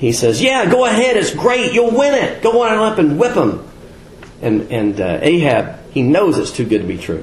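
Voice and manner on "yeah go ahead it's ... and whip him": very high-pitched mocking, sarcastic delivery. Retelling a story where one man answers another who called him in, retelling a sarcastic reply. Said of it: "Micaiah sarcastically says".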